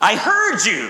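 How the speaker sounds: said with strong emphasis. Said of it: "the child said emphatically".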